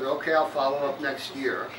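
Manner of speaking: ordinary talk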